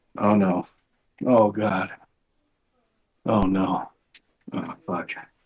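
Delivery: very low, panicking, panicked exclamations. Left to keep the people entertained alone, the speaker starts panicking. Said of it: "I'm panicking".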